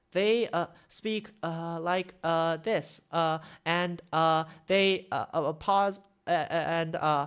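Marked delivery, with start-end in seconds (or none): 0.1-3.0 slow, hesitant, halting, with uh after every word. Imitating people who speak too slowly, slow with uh between words. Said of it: "Too many people speak extremely slowly".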